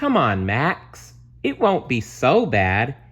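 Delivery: cheerful, sing-song, coaxing big-sister voice. Emmy answering her grumbling younger brother max, in her cheeriest big sister voice. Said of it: "using her cheeriest big sister voice".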